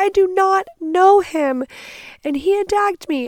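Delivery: shrill, loud scream, pitched very high. Retelling an attack by a stranger, answering a couple: retelling a scream. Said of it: "I'm like screaming".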